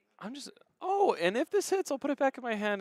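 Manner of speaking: bouncy, playful fun voice, very high pitched. Imitating a player's line from his earlier match: Anthony's fun voice. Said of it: "in his normal Anthony fun voice".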